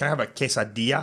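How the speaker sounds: put-on quesadilla pronounced with a Spanish accent. Mimicking a guy ordering at a mexican restaurant: spanish accent on quesadilla. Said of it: "he would say like the the accent on it".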